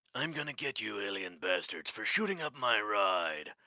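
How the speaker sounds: cocky, swaggering action-hero voice. Quoting the character's lines while chatting about doing the voice, Duke Nukem voice. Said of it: "the Duke Nukem voice".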